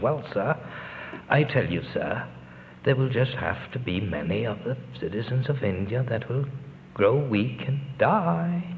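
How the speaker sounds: put-on Oxford English accent. Retelling a man's answer to a question about food for India, in his British Oxford accent. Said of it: "In his British Oxford accent".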